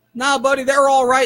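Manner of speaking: put-on Southern accent. Retelling what a friendly-looking guy said as they drove down the block, southern accent. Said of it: "Southern accent, even in Ohio".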